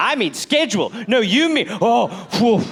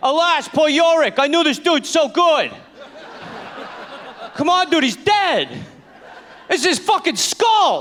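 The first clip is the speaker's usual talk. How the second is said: Boston accent, pitched up, stage-actor style; 7 semitones higher than usual. Imagining a guy on stage doing Shakespeare in the park, in a Boston accent. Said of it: "Boston accent".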